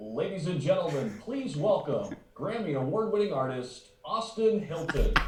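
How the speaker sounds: arena announcer, official media broadcast voice. Asked by the host to do his official media broadcast voice: official media broadcast voice. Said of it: "your official media broadcast voice".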